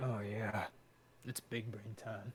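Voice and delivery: deep, very quiet, hushed low voice. Joking during a game with friends: Markiplier impression. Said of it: "that's my Markiplier impression".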